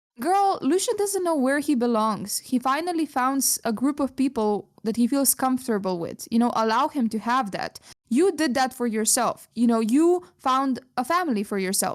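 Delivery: ordinary talk, nothing marked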